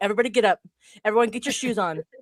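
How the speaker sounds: mock, put-on bossy voice. Retelling how Rue rushed everyone out in the morning: imitating a bossy dad. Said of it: "Rue is a dad".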